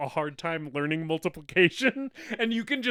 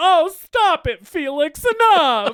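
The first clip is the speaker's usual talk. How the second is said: put-on panicked voice, higher and louder; 11 semitones higher, 10 dB louder than usual. Retelling a movie beating scene, imitating Gopher in the background pleading. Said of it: "Gopher's in the background being like".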